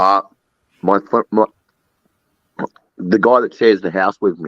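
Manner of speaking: speaking while eating, mouth full. Answering who is angry, talking while eating. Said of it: "I was eating something".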